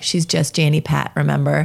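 ordinary talk, nothing marked

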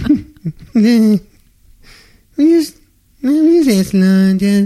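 high, loud mock-reverent voice. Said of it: "That's how they say".

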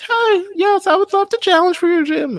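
put-on very high, tiny, squeaky little girl voice. Recounting Ash dressed up as Ashley asking to challenge the gym, little Ashley voice. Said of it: "The little voice".

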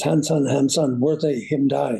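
ordinary talk

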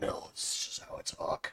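slow, barely-there whispered vigilante voice. Asked whether you are Batman, deny it in a Batman voice. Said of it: "Batman, is that you?".

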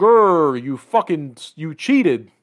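mock mad, loud, accusing angry blurt. Retelling how a character reacts after losing his magic ring, mock-angry character. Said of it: "And then he gets mad. He goes".

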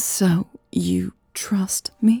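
trembling, shaky, unsteady voice. [name] asks Louise a question, her voice shaky. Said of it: "her voice shaky".

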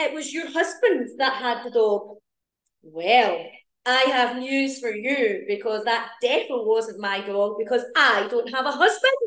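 broad, thick, strong put-on Scottish accent. Retelling a woman's reply about a dog, put-on Scottish accent. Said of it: "I put on a right Scottish accent there".

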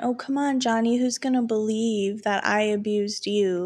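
normal talking voice

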